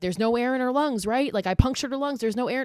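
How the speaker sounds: put-on high-pitched, frantic, alarmed screaming. Retelling what someone screamed after a stabbing: imitating screaming. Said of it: "Garrett's just screaming".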